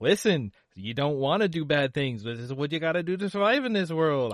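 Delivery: put-on streetwise kid character voice. Pitching a street-smart thief kid character, speaking as him: street-rat thief kid voice. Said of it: "i made this voice".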